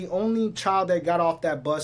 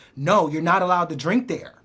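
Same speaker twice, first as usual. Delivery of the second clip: put-on completely serious, no joking, dead serious; 3 dB louder than usual. Retelling what she said when stopping a child from drinking: imitating someone dead serious. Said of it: "like, dead serious".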